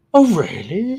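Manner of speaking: put-on curious tone. Retelling a talk with a new recruit, imitating a curious tone. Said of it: "so curious".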